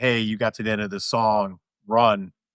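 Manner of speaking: ordinary talk, nothing marked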